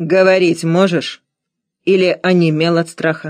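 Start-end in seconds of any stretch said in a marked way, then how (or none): none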